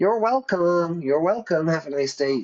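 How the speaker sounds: exaggerated American accent. Describing how Americans answer a customer's thanks: imitating Americans. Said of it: "Americans are always like, Nobody speaks like this in England or Ireland".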